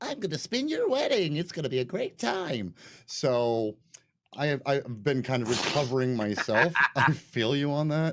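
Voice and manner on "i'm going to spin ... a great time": put-on high, prepubescent young boy's unbroken voice. Explaining to the boss why the Skype call should be moved, in a prepubescent boy voice. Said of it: "sound like a prepubescent, you know, boy".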